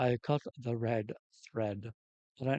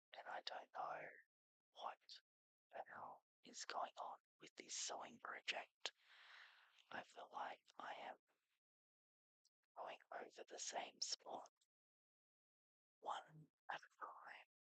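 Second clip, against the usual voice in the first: speaking in a whisper, higher and quieter; 5 semitones higher, 24 dB quieter than usual. Welcoming viewers to Story Therapy while sewing: whispering. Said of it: "continue to do this in a whisper".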